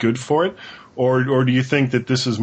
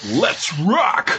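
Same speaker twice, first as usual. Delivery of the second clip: pitched-up, announcer-style radio DJ voice; 7 semitones higher than usual. A guest quotes the slogan on an Apple flyer: radio DJ voice. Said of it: "And there I'm going back to the radio DJ voice".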